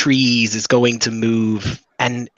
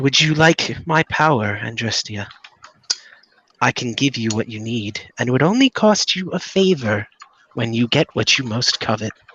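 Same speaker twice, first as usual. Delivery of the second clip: echoing disembodied voice, quieter; 4 dB quieter than usual. The narrator voices a mysterious voice offering a bargain to Andrestia: echoing from everywhere. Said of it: "the voice now just kind of sounds like it's echoing".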